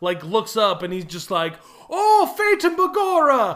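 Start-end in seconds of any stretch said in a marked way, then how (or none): 1.9-3.6 put-on squeaky, very high, slow Irish accent. Retelling a movie scene where a cop watches men fall: imitating an irish cop. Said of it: "the Irish cop".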